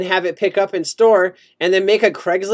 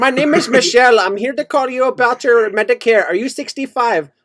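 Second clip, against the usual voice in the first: fake, put-on American accent; 4 semitones higher than usual. Imitating a Medicare call center caller, put-on American accent. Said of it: "on an American accent and call themselves John".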